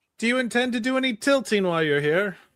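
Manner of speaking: loud high-pitched yelling. Game master voicing a chevalier calling out to a knight, yelling from the table. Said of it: "One of one of the chevaliers yells from the table".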